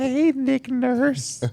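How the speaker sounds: very high voice cracking on the word. Retelling how he greeted Nick Nurse, imitating a cracking voice. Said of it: "voice cracked and everything".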